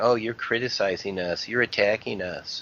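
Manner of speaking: ordinary talk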